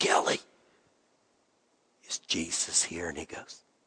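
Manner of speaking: hushed, very quiet whisper. Retelling a quiet question asked in a silent room: retelling a whisper. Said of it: "So just real quietly, I whisper".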